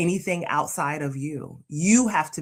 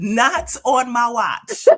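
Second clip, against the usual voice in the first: deliberate, spaced-out, slow, loud, high delivery; 8 semitones higher, 6 dB louder than usual. Refusing to let a friend complain, in an Iyanla Vanzant voice. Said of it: "in my Iyanla voice".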